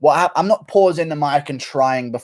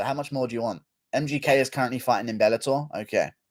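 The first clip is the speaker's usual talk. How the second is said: ordinary talk, nothing marked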